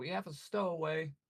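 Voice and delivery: high-pitched, shouting yell. Narrating gnomish guards dragging a prisoner, voicing them yelling. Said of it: "and they're just yelling".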